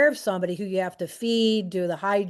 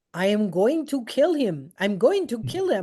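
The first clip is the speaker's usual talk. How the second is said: heavy, thick put-on Jamaican accent. Retelling a woman who pulled the speaker into a bathroom, imitating thick Jamaican accent. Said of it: "with that thick Jamaican accent".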